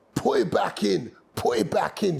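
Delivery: rasped, rough, creaky mild yell. Retelling a knee injury, calling to a brother: imitating own screaming. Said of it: "I'm screaming at my brother".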